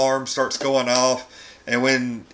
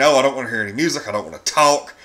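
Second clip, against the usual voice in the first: ordinary talk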